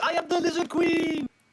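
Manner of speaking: acted-out yell. Describing leaping off the side of a burning bridge, acting out a yell. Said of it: "leap off yelling".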